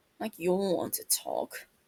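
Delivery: muttering under the breath. Reading a story aloud, a character answers a complaint: muttering under the breath. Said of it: "Duke mutters under his breath".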